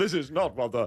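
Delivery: put-on po-faced commentator voice. Mocking a po-faced commentator: Brian Butterfield voice. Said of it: "I don't know why I've turned into Brian Butterfield".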